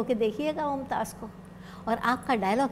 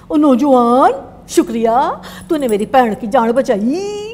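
put-on Punjabi-accented speech; 16 dB louder than usual. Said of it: "पंजाबी लहजे में बोलते थे कुछ इस तरह".

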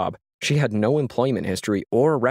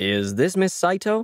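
polished, smooth, businesslike professional tone, pitched up; 9 semitones higher than usual. A caller asks whether he is speaking to miss saito; smooth, professional tone. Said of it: "inquired in a smooth, professional tone".

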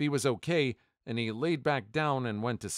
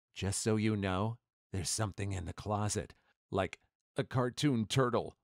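soft, hushed, secretive stage whisper; 4 semitones lower, 3 dB quieter than usual. Reading a story about a sleep-talking boyfriend, retelling a half-whisper. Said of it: "got real close to my ear and whispers".

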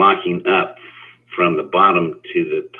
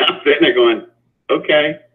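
ordinary delivery

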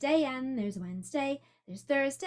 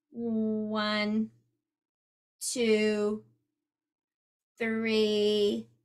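flat mechanical robot voice, "one" drawn out; 4 semitones lower than usual. Asking listeners to join in counting like a robot: counting like a robot. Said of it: "Can you help me count like a robot?".

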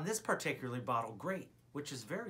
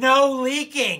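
high-pitched, very loud, all-out shouting; 8 semitones higher, 17 dB louder than usual. Reading aloud a message written in all caps, reading in all caps. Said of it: "read it as one would read anything in all caps".

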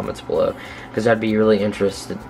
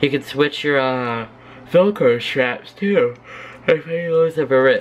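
slow words stretched through a yawn; 4 semitones higher than usual. Speaker showing viewers the swappable parts of skates: yawning while talking. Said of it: "I'm yawning".

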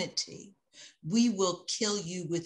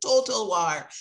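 put-on loud Jamaican accent; 3 semitones higher, 7 dB louder than usual. Quoting a Jamaican American scholar's phrase: Jan Carew's Jamaican accent. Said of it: "Total war in his Jamaican accent".

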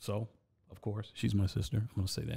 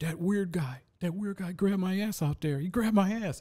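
mock screaming and sobbing, much higher; 9 semitones higher, 4 dB louder than usual. Retelling the sister running back after being grabbed, imitating screaming and crying. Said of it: "she's screaming and crying".

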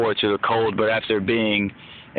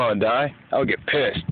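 ordinary talk, nothing marked

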